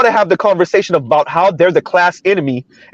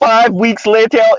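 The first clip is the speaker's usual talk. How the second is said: put-on cartoon narrator, announcer-style voice; 4 semitones higher than usual. Explaining a time jump, imitating a SpongeBob time card: SpongeBob narrator voice. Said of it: "if you hear me say it like that, that's me like imitating like um SpongeBob".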